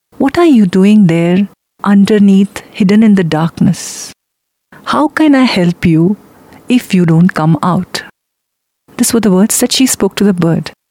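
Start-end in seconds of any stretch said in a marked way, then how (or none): none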